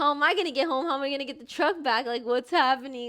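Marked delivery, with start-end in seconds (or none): none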